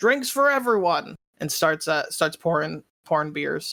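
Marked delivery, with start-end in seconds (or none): 0.0-1.2 high, loud yelled call. Voicing a bartender announcing a round: bartender yelling. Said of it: "the bartender yells out".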